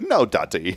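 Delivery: put-on light, slight British accent. Retelling a son's refusal: imitating Caden's British-sounding voice. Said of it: "he kinda sounds British".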